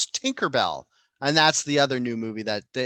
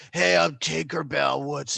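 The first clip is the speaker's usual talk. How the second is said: put-on smoky woman voice. Pitching a washed-up Tinkerbell trying to get the band together, smoky-voiced Tinkerbell. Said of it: "that's her smoky woman role".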